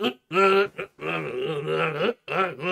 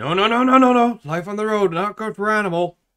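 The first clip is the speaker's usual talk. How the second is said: acted-out hollered shout, loud, flat and emphatic; 4 semitones higher, 6 dB louder than usual. Retelling a Muppets clip about Animal being invited on tour: imitating Dr. Teeth shouting. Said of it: "Teeth shouted".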